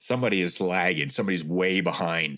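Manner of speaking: ordinary talk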